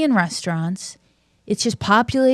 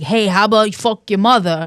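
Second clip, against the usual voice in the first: put-on New York accent. After a caller's praise on the show, contrasting with rude New Yorkers, put-on New York accent. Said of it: "instead of being like".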